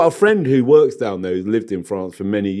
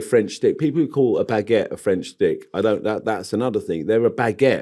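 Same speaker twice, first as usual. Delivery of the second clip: usual speaking voice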